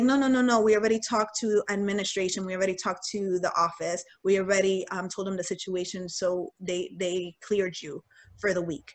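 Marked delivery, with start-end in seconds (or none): none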